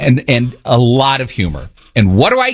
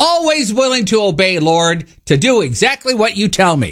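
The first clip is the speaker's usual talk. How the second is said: mock sarcastic tone, higher; 5 semitones higher than usual. Retelling own reply when god says to show appreciation: retelling own sarcastic reply. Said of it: "that's sarcasm".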